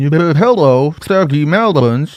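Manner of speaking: mechanical robot voice with drawn-out hello. Showing what they were trying to do, the speaker does a robot voice. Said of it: "trying to do the robot".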